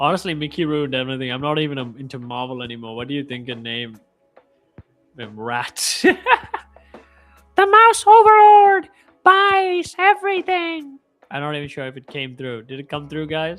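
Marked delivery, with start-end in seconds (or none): 5.2-11.0 put-on cartoon mouse voice, much higher, louder, slower. Speaker talking to viewers, in a Mickey Mouse voice. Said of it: "Did my Mickey voice come through?".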